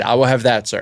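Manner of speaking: ordinary talk, nothing marked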